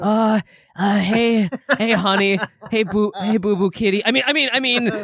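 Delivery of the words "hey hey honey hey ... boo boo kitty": meek, high voice stumbling over words. Acting out a scene, trying a big voice: meek Gordon voice. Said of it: "he's, like, so much meeker".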